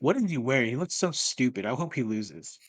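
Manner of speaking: ordinary delivery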